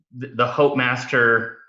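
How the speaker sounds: ordinary talk, nothing marked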